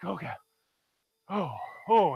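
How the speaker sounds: winded, breathless, gasping and panting for air. Retelling being pulled to the shallow area, acting out being out of breath. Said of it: "I'm just out of breath".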